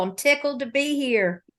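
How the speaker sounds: Southern drawl. Guest thanking the hosts as she is welcomed on the show, in a Southern drawl. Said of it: "I said in my Southern drawl".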